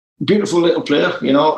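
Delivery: put-on Newcastle-style Geordie accent. Retell what Sir Bobby said on the phone about a player, as a Bobby Robson impression, Geordie accent. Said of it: "that's my Geordie accent".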